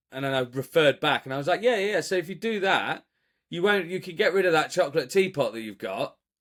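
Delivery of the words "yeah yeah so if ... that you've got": mock heavily sarcastic, pitched-up tone. Retelling a reply to a tenant: retelling own sarcastic reply. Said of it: "just really sarcastically sort of responded".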